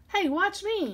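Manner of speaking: full-throated, high, very loud shout. Crawling on all fours into the crate, the speaker calls for attention: yelled. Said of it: "yelled [name]".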